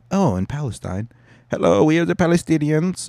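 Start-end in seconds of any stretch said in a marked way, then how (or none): 1.5-3.1 put-on German accent on English. Voicing the palestinians in a world-history bit, in a german accent. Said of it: "why I'm talking like I'm from Deutschland".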